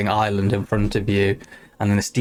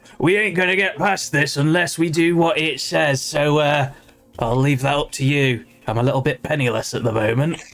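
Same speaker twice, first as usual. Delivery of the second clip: high-pitched ship captain's calling-out voice; 5 semitones higher than usual. Voicing a ship captain stuck beside a giant creature: captain yelling. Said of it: "the captain probably is, like, yelling this".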